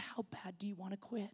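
hushed, gentle, very soft and peaceful voice. Retelling the speaker's mom answering a lady who wants to quit smoking, imitating a peaceful, nice voice. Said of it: "in a very peaceful, nice voice".

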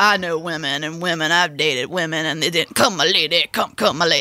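put-on drawling narrator voice. Imitating a voiceover narrator, sounding vaguely McConaughey-ish. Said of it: "you sounded vaguely McConaughey-ish".

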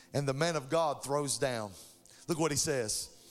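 plain

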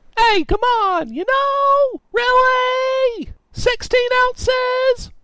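put-on insistent, very high drunken shouting and screaming. A drunk Tallboy stumbles into a computer repair shop, drunk screaming. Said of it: "This guy was clearly too drunk to realize he had stumbled into a computer repair shop, ... Tallboy screamed".

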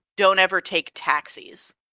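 plain

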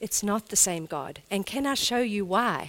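very gentle, easy tone. Speaker showing how they answer friends' question about God: reenacting a gentle reply. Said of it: "I can very gently say to them".

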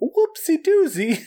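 very high, squeaky cartoon girl voice. Discussing a cartoon character's voice with the other speaker, then mimicking it: Betty Boop voice. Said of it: "the voice. Is like".

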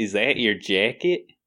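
put-on Chicago accent. Asked if he is trying his chicago accent, he answers: put-on chicago accent. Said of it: "It's a little spin on that".

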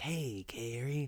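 put-on stoner California drawl. Showing how someone says hey Carrie, Jack Nicholson-meets-stoner voice. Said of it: "Jack Nicholson meets like Stoner California vibe".

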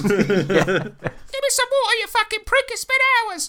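grating, very high, annoying potted-plant voice. In a tabletop game, a player voices a creature stuck in a pot, annoying voice. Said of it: "such an annoying voice".

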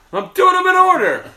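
very loud, high, belted sitcom-lead outburst. Answering a complaint about picking out of order: Seinfeld voice. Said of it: "Was that a Seinfeld voice?".

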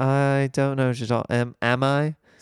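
put-on slipping British accent. Retelling a phone call with mom: imitating own slipping British accent. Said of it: "Are you talking with an accent right now?".

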